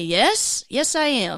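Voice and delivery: put-on, very drawn-out and slow, through a laugh. Retelling answering a stranger who asked if single: retelling a laughing reply. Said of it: "I laugh and say".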